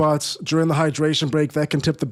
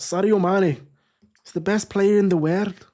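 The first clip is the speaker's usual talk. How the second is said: horrible put-on Scouse accent, pitched up; 5 semitones higher than usual. Naming a player while going through a list, in a horrible scouse accent. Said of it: "Horrible Scouse accent".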